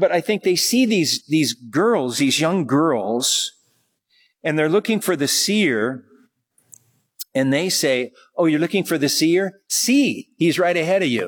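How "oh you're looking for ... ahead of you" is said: lighthearted, teasing delivery. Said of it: "play on words".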